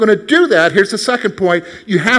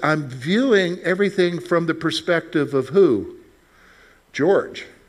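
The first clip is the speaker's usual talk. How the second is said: normal talking voice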